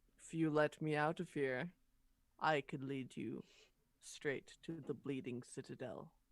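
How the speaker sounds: low, hushed, quiet half-whisper. The narrator voices a shield speaking in a character's mind, half-whisper. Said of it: "sort of whisper in your mind".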